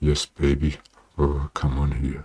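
deep, wide, relaxed, low and easy voice.

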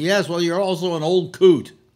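man yelling loudly. Speaker retells a man yelling at him after a cart tap, retelling a man yelling. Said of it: "he starts yelling at me".

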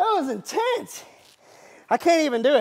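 winded, out of breath, high panting voice. After trying the Rotobrush by hand, the speaker reacts, out of breath. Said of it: "I'm out of breath".

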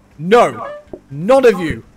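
very slow, loud, emphatic, drawn-out shouting. Cooking with teammates who order everything but olives: shouting at the olives. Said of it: "Why are you shouting at the olives?".

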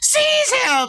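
very high, shrill, screeching yell. Narrator voicing Meepo whirling around on seeing the player stride in, Meepo yelling. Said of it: "and yells".

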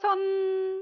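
playful, high-pitched, loud shout.

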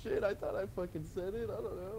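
flustered delivery in a high-pitched voice.

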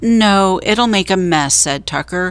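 ordinary delivery

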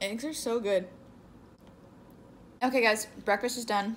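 speaking while chewing, mouth full. Finishing breakfast before getting to work, talking with mouth full. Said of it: "My mouth is still full".

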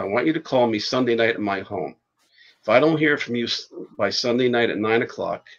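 plain

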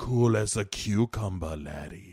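soft-spoken, low, quiet menacing tone. Retelling what a tree said in a story, mock-menacing tree voice. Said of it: "Why are you saying it all menacing like that?".

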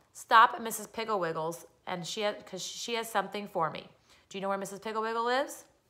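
ordinary delivery

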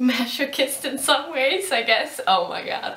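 laughing while talking. Explaining why she is making a video, laughing while talking. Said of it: "why am I laughing?".

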